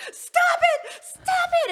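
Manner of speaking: very high, very loud, shrill, drawn-out furious yell. Retelling telling someone to stop, imitating own angry yell. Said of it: "that would make you so mad".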